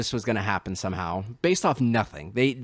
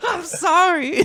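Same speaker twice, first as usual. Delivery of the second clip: very high, loud sobbing wail, crying scream; 6 dB louder than usual. Retelling how a film character screams while half crying: imitating a crying scream. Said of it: "he just screams, like, part of, like, crying".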